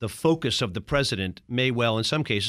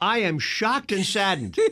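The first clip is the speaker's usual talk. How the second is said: feigned, pitched-up dismay dripping with sarcasm; 8 semitones higher than usual. Reacting to hearing that a president's cabinet was terrible: sarcastic, fake shock. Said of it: "that was sarcasm".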